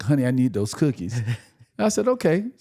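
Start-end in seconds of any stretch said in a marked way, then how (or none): 0.0-1.2 acted, trembling, almost shaking voice. Retelling what she said to him one rainy night, imitating a shaking plea. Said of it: "she was like almost shaking".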